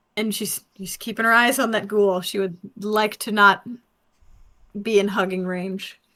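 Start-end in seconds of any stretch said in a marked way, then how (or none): none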